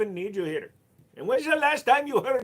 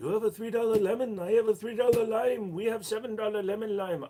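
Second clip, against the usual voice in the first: poor put-on Korean accent. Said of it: "I cannot do a very good Korean accent".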